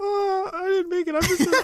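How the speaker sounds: very high, whiny put-on character voice.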